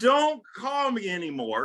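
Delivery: mock slow, drawn-out pleading. Retelling asking a lady to stop calling: retelling own plea. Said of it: "I pleaded".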